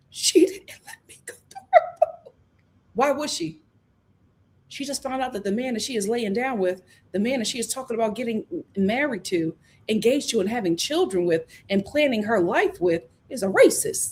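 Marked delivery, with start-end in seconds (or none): 0.1-2.3 strained, forced, put-on fake sobbing. Retelling how a man tried to cry over a woman: imitating his forced crying. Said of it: "try to cry".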